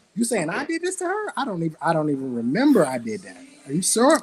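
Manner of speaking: put-on bewildered tone.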